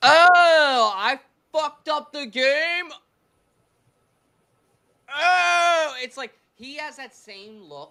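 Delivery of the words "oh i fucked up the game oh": very slow, high, loud, drawn-out oh. Doing an impression of the pitcher Romano on the mound: imitating Joey Romano. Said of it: "I'm gonna try to do my best impression of what the fuck he looks like".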